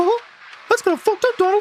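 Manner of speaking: silly disbelieving voice. Speaking to a teammate who just died in the game, in a goofy incredulous voice. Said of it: "I've activated Goofy Goofy voice of incredulous".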